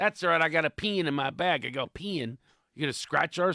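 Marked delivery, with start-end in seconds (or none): 0.0-1.7 imitated Texas accent, higher. Retelling what a golfer in Texas said about a pen: imitating a Texas accent. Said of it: "talk about accent difference".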